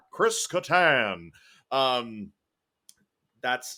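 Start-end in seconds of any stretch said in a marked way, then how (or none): 0.2-1.3 loud, high announcer call-out, full blast. Recalling how the show's cast intro used to sound, Don Pardo impression. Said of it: "he would literally read all of their".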